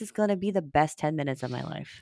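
ordinary talk

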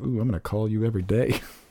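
giddy, gushing little-schoolgirl excitement. Retelling own held-back excitement about a brewer moving nearby: mock schoolgirl excitement. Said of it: "Like a little schoolgirl".

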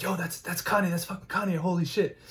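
high stage whisper, as loud as a half-whisper goes. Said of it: "whispering to each other".

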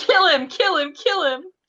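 put-on very high, shrill, loud, repeated child's yelling. Talking about a younger brother who hates him, the speaker imitates a kid yelling. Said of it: "he's just yelling".

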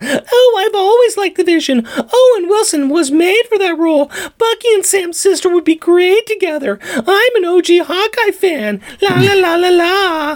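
mock gushing fanboy voice, way up high.

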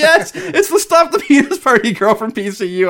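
high, loud, excited laughing glee.

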